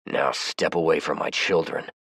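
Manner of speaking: low growl, voice dropped. Reading a story where the narrator repeats his order to step away: low growl. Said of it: "lowered my voice to a growl".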